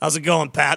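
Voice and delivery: raspy put-on football-coach voice. Playing Coach Gruden, greeting the host Pat in a raspy Coach Gruden voice. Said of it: "a little raspy there".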